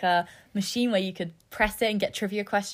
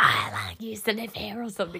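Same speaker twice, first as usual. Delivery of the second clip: eerie, spooky put-on ghost voice. Retelling hiding under someone's bed as she walked in: ghost voice. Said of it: "in a ghost voice".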